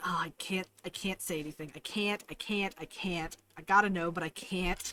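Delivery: strained, teeth gritted. A player voicing a character barely holding himself together, through gritted teeth. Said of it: "he's like gritting his teeth".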